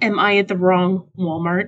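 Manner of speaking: ordinary talk, nothing marked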